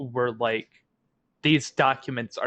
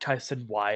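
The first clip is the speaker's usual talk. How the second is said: flat, level, expressionless monotone delivery; 3 semitones lower, 4 dB quieter than usual. Quoting how Bjorn answers, done in Bjorn's flat monotone voice. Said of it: "in a monotone voice".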